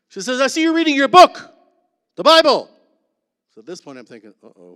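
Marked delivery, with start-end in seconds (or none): 0.4-2.7 very loud, high, carrying call. Speaker retelling what a woman said looking into his cell; loud carrying voice. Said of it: "That's just how she spoke, without a mic".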